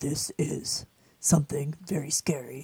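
deep movie-trailer voiceover announcer voice. Describing scary movie trailers, imitating the guy's voice: movie trailer narrator voice. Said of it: "the trailer where the guy's voice is like".

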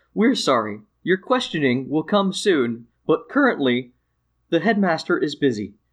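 automated, recorded, magical-sounding announcement voice. A storyteller voices an announcement that comes on in a building, automated magical voice. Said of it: "like magical voice that comes on and says".

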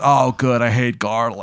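slow, drawn-out, deliberate movie-star voice. Playing an actor in a scene who sounds like Nick Cage: Nick Cage impression. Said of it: "he sounds just like him too".

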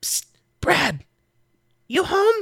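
stage whisper pitched way up very high. Griddle leans over the pit edge calling down to Brad, Griddle half-whispering. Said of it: "makes his way over to the edge and whispers down".

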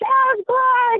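put-on very high, shrill screaming holler. Telling a story about a hike, repeating the shout he kept calling out for the kids. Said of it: "I'm screaming as hard as I can".

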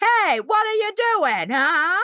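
mock aggressive child shouting. Retelling lines of an aggressive child character: imitating an aggressive child screaming. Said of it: "this aggressive three-year-old child would come in and he'd be like".

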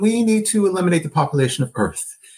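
casual, offhand, matter-of-fact, nothing creepy. Describing a Deep Space Nine character, the speaker is retelling an offhand remark. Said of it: "he says it just like that".

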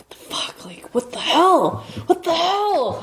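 freaked-out muttering. A player's character, left with no defense, mutters to himself, muttering to himself. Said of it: "I'm kinda of muttering to myself".

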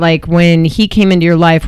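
ordinary delivery

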